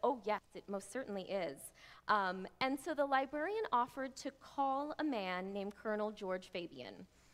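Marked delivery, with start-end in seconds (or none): none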